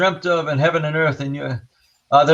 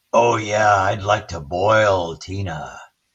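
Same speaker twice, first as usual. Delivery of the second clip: very low, deep, impish, menacing malevolent spirit voice; 7 semitones lower than usual. Recounting an investigation, quoting what the spirit voice said: imitating a malevolent, mischievous spirit. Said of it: "it's malevolent, it's mischievous. It goes".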